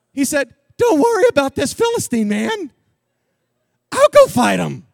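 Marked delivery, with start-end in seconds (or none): 0.8-4.1 put-on high, boyish unbroken voice with kid-like swing. Retelling the boy David speaking to Saul: young David's unbroken voice. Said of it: "said it more like this because his voice hadn't changed yet".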